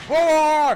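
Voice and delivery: high, loud, mocking greedy whining voice.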